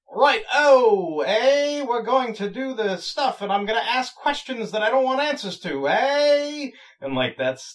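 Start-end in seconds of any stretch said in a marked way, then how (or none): 0.2-6.7 shrill, very high, very loud British officer voice. Recalling how a British lieutenant character sounded, imitating a British lieutenant. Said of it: "one of those British lieutenants".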